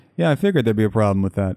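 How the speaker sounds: mock expressionless voice. Retelling how he answered the bad news, imitating his deadpan reply. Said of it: "he's very weird and like deadpan about it".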